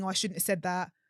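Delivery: ordinary talk, nothing marked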